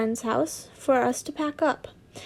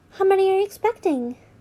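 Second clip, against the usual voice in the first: high-pitched character voice; 6 semitones higher, 3 dB louder than usual. Reading a story aloud, the speaker voices the blonde character in a high-pitched voice. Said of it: "I'm gonna do a high-pitched voice for the blonde".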